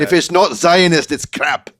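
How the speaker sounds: put-on Scottish accent. Reading out a statement aloud in a put-on voice: Scottish accent. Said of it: "an incredible Scottish accent".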